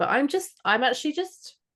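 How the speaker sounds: pitch rising at the ends. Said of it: "my voice just, like, went higher at the end there".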